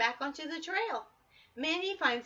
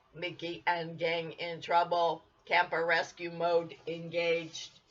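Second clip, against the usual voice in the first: very low, flat, machine-like robotic voice; 9 semitones lower than usual. Reading a story aloud, voicing the talking camper: robotic voice. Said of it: "the camper says in a robotic voice".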